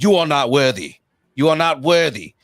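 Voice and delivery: loud, belted, fake British pirate accent. Retelling a guy at a match who kept repeating this; fake Johnny Depp accent. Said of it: "fakest Johnny Depp wannabe accent going".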